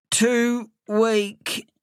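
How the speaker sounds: gasped out. A friend lying on the doormat answers the narrator's question, gasping. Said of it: "he gasped".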